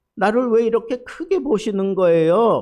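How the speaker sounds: complaining, lamenting tone.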